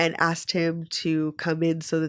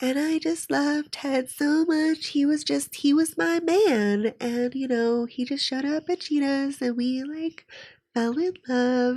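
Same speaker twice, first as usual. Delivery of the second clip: put-on soft baby voice, much higher pitch; 9 semitones higher than usual. Describing a woman's interviews, the speaker imitates her: Sandy's soft baby voice. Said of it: "she does that thing where she has baby voice".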